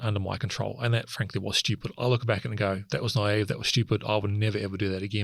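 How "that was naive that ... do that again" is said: ordinary talk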